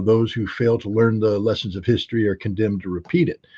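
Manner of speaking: ordinary talk, nothing marked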